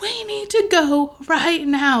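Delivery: acted-out high, loud scream. Retelling how the speaker's sister screamed at a dazed man: imitating someone screaming. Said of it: "I remember her screaming at him".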